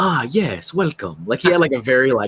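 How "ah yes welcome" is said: smooth, suave audiobook narrator voice. Imitating the audiobook reader's voice for a character: imitating a suave voice.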